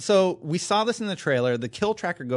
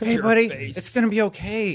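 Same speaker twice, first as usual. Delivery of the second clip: mock condescending, patronizing dad voice, pitched higher; 4 semitones higher than usual. Reassuring another speaker about their concerns: put-on condescending dad voice. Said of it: "that condescending dad voice".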